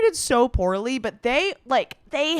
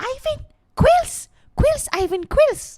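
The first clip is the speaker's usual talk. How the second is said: cartoon character voice with put-on Spanish accent; 12 semitones higher than usual.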